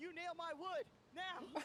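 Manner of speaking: very high, slow, shouted yelling. Voicing a character who yells an order at another character: Alistar yelling an order. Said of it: "Alistar's gonna yell at Adrian".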